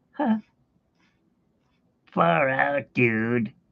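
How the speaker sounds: rough attempt at a cartoon boy voice. Speaker admits they can't really do it, attempting a Bart Simpson impression. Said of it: "I can't even do Bart Simpson like".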